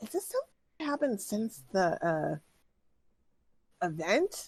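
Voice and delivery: loud, projected stage whisper. Voicing a character who asks about the event: loud whisper. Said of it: "she says kind of in a loud whisper".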